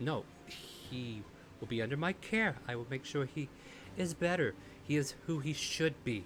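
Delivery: slow, stuttering, stumbling over words. In a game, the narrator voices a character the players just shook, stuttering her words. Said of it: "she kind of like stutters her words".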